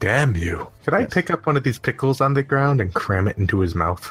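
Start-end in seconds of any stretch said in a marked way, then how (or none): 0.0-0.7 whispering in a put-on voice. Playing a character who whispers a curse at a bleeding goblin: whispering in character. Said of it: "I'm gonna whisper".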